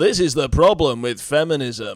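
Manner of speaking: alarmist pundit cadence with a set alarmed rhythm. Doing an impression after describing his very particular cadence: Paul Joseph Watson impression. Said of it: "your impression of him".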